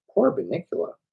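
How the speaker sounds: ordinary delivery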